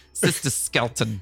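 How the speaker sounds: New Jersey accent. Joking that the name should be Sister Skeleton, say it in a Jersey accent. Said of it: "you got to say it with the Jersey accent too".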